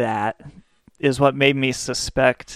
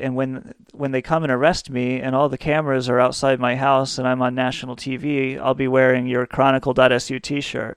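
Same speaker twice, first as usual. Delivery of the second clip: normal talking voice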